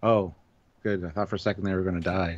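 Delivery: put-on level, expressionless, flat deadpan delivery. Speaker praising a comedian's line, quoting it in Tig Notaro's flat deadpan delivery. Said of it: "Just the flat deadpan delivery".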